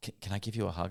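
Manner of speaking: put-on trembling, nervous voice. Retelling a mother who shakes while asking for a hug: imitating a trembling mother. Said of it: "she's just, like, vibrating and shaking".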